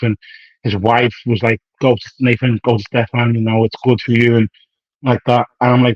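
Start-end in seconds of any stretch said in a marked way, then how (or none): none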